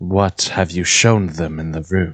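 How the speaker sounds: put-on whispery voice. Speaking from inside the wall behind a man: Tassar's whispery voice. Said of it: "he just hears Tassar's whispery voice".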